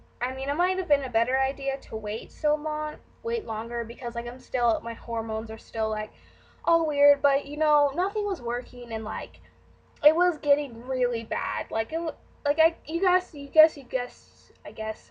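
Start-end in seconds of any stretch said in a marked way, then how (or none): 11.7-15.1 stuttering, stumbling false starts, tripping over words. Explaining something to viewers, the speaker keeps tripping over words, stuttering. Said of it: "Sorry, I'm stuttering".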